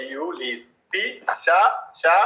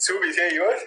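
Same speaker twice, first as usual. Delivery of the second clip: usual speaking voice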